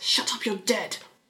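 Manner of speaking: soft, hissed through the teeth. Narrator voicing a character snapping back after someone whispers, hissing. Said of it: "Hisses Lucien".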